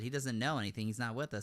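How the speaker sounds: ordinary delivery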